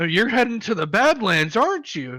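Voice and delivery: curious dwarf character voice. Voicing a dwarf who questions the half-orc: voicing a dwarf. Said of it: "one of the dwarfs picks up and goes".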